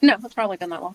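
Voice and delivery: casual, unbothered, nonchalant tone. Answering a painful personal question, nonchalant. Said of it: "She says that very nonchalant".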